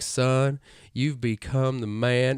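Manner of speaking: put-on southern American accent. Retelling a movie scene where the father speaks: imitating a southern american accent. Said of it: "it's more like Western or Southern".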